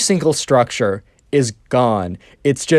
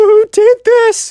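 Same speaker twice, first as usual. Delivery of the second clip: put-on very high, loud whimpering cry, edged with rage; 7 dB louder than usual. Retelling the Minecraft kid's reaction to the blast, mock crying, whimpery voice. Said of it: "kind of like a crying, whimpery voice".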